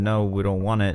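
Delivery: ordinary talk, nothing marked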